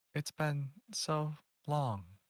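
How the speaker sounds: hushed, quiet voice. Greeting someone not seen in about ten years, speaking very softly. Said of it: "You're talking very softly".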